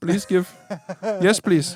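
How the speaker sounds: put-on Indian accent with a pleading, begging tone. Doing a joke accent bit with the other speaker, in a put-on indian accent. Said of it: "I'm trying to be like Indian".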